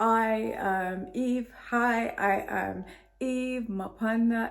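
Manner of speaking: very drawn-out, slow, stiff mechanical robot voice. Recalling unnatural past self-introductions, robotic, stiff voice. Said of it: "I sounded like a robot".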